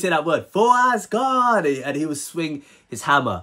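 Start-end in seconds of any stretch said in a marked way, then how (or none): 0.5-1.6 high-pitched, screamed heroic war cry. Recalling a cartoon hero's habitual cry while swinging his hammer, imitating a battle scream. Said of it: "He would always scream out".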